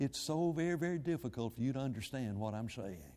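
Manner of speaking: very quiet, low preaching voice. A preacher showing how a lowered voice sounds in public prayer, low quiet voice. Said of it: "I lower my voice and start talking like this".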